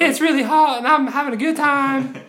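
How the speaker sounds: very high voice like a small talking dog. Imagining a stack of pugs stopping a robber, speaking as one: dog voice. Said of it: "That's my dog voice".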